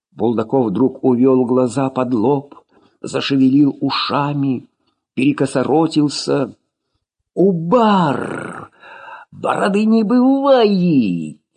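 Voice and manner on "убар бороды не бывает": cracking, fit-like, high-pitched breaking yell. Narrator reading a character suddenly contorting his face at a captain, fitful breaking yell. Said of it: "заорал припадочным, срывистым голосом".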